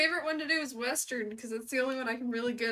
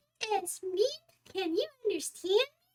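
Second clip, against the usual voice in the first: put-on squeaky voice; 7 semitones higher than usual. Trying a first line on request, unsure some words work: squeaky voice. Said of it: "run this first line for me in a squeaky voice".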